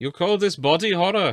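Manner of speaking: put-on Welsh accent. Speaker acts out a game character waking up in a trap: Medic voice, sounding Welsh. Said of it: "That was very Welsh".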